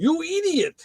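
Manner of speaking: very high cartoon-style voice. Voicing what the Snap-on guy said to him: Ren and Stimpy voice. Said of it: "in his best Ren and Stimpy voice".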